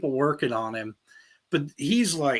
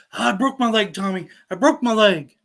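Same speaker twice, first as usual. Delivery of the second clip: put-on screaming, louder; 5 semitones higher, 4 dB louder than usual. Retelling a phone call from Jared; imitating Jared screaming. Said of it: "he's screaming in the phone".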